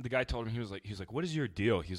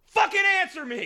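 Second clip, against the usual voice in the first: shrill, very loud, high-pitched full-volume yell; 11 dB louder than usual. Describing a man in a tuxedo who pauses mid-question, the speaker re-enacts his yell. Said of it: "he pauses and he yells".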